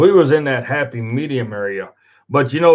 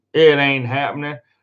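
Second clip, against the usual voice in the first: usual speaking voice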